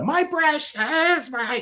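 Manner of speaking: very high, possessive voice. Imitating Gollum when someone takes a slice of pizza: Gollum voice. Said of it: "if somebody takes away your slice of pizza".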